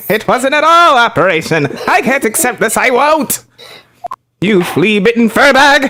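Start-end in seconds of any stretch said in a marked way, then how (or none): 1.9-5.8 odd, weird little nerdy character voice. Voicing a character's insults while playing, in a weird little nerd voice. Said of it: "this weird little nerd voice for him".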